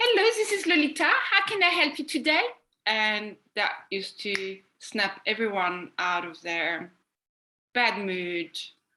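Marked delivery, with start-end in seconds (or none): 0.0-2.4 high, bright, bubbly phone voice. Retelling answering call-center callers as a pretend manager: put-on bubbly Lolita voice. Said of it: "she was very bubbly and speaking like this".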